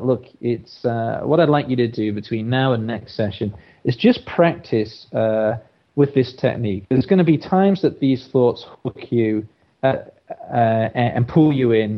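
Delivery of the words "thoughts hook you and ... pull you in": ordinary talk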